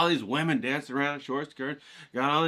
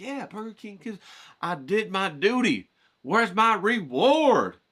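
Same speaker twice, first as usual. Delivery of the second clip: play-acted excited, eager kid voice, high and drawn out; 6 semitones higher than usual. Imitating a kid in the car expecting a Burger King reward: imitating an amped-up kid. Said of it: "you're all amped to go".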